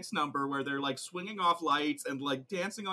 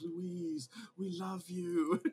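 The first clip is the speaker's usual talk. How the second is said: soft, eerie, otherworldly half-whisper; 3 semitones higher, 6 dB quieter than usual. Retelling the voice a hospital patient hears half-whispering to her, an unearthly half-whisper. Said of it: "an unearthly voice like whispering to her".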